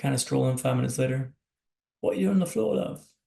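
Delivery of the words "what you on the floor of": put-on British accent, higher and louder. Retelling a nurse's question after a fall to the floor: imitating a british accent. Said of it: "that's a fantastic British accent up there".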